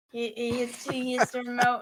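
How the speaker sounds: ordinary talk, nothing marked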